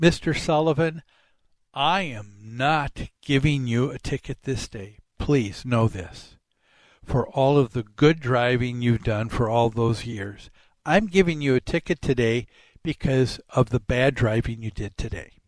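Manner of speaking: put-on deeply earnest, sincere, heartfelt police officer voice. Retelling what a police officer said at a speeding stop: imitating an earnest police officer. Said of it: "in such earnestness".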